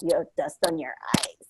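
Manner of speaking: hushed, whispered mutter under the breath. Recalling a reply to their mom, retelling a mutter under breath. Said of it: "like under my breath".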